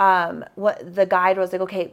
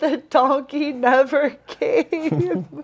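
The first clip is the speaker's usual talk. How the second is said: high, very slow voice, crying through the words; 6 semitones higher, 3 dB louder than usual. Retelling what a crying hiker said at the pass: imitating someone crying. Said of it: "She's crying".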